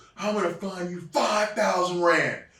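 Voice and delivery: loud, high-pitched yelling. Retelling being yelled at for being late for the tour bus, imitating someone yelling. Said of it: "And he's yelling at me".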